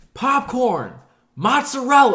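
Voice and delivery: very high, loud yelled callout. Retelling calling out orders to the kitchen: retelling own yell. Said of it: "literally yelling, like as if I was yelling at them in the kitchen".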